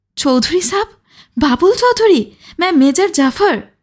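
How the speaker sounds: crying out with emotion. Major Jafar, pushing Shafi aside, cries out to Babul, emotional outcry. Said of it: "আবেগের সঙ্গে চেঁচিয়ে উঠল".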